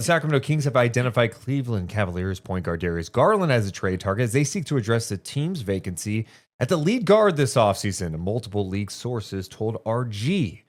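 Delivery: ordinary talk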